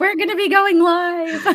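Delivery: high, loud yell through a laugh.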